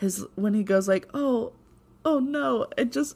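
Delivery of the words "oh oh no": put-on, pitched-up voice breaking and cracking a little. Retelling how Coulson reacts on finding her shot: imitating Coulson's voice breaking. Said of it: "the way his voice broke a little".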